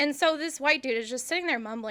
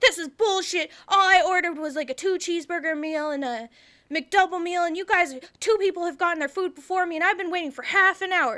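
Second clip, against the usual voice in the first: mock full-on loud, pitched-up yelling rant; 6 semitones higher, 5 dB louder than usual. Retelling a customer yelling at the manager: imitating someone yelling. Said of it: "starts, like, yelling at this guy, and he was just like".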